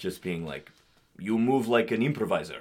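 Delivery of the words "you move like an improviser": put-on stern Russian accent. Retelling what a first-year acting teacher said: imitating a stern russian teacher. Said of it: "this, like, very stern Russian woman, just being like".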